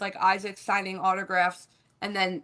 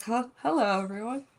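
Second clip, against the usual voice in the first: hesitant, unsure, caught-off-guard tone; 3 semitones higher than usual. Imitating the other speaker's hello, as if unsure the recording had started: imitating an unsure hello. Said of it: "The way you said hello wasn't like".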